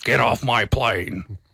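deep, gravelly, slow and drawn-out. Quoting a movie line in a Harrison Ford impression. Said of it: "Harrison Ford, deep, grovelly voice".

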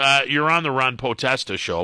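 ordinary delivery

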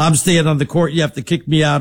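ordinary delivery

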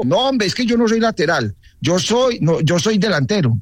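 high, annoyed tone. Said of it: "Y hasta se le enojó".

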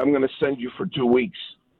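ordinary delivery

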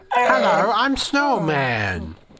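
swooping, high, sing-song talking snowman voice. Answering what a talking snowman would sound like: talking snowman voice. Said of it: "what he sound like?".

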